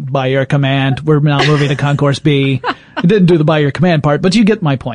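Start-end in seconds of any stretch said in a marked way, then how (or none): 0.0-2.6 flat, droning robotic monotone. Recalling the old airport plane train's announcements, in a Cylon robotic voice. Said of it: "It had that kind of robotic voice".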